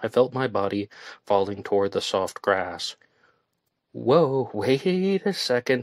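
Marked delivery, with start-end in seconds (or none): 3.9-5.8 very slow, high, drawn-out gasped exclamation. Pulling the drunk narrator back as they fall toward the grass, gasping. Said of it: "Jamie gasped".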